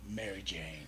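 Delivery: low, soft character mutter.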